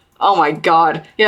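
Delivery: ordinary talk, nothing marked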